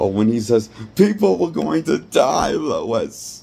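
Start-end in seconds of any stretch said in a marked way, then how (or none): 1.0-3.4 mock whiny, high, drawn-out whine, holding back tears. Critiquing a character's delivery, the speaker mimics his line: mock-whiny, fighting back tears. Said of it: "it sounds like he's trying to fight back his tears".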